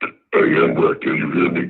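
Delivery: put-on spooky villain voice. Calling someone on the phone for a joke: spooky Darth Vader voice. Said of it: "You sound spooky as hell".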